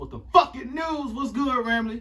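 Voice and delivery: high, loud, hyped announcer shout.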